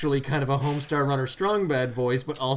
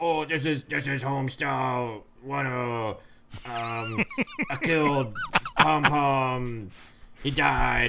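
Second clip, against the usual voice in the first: rough cartoon voice, much slower. Retelling a voicemail someone left in character, in a Homestar Runner voice. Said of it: "while doing that voice".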